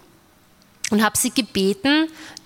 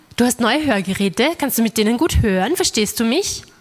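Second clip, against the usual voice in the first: normal talking voice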